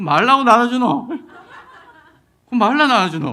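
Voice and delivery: Busan dialect, sounding mock-angry. Imitating people in Busan handing out bread, in Busan dialect sounding mock-angry. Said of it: "부산 분들의 이 말투를... 화내는 것처럼 들리지만".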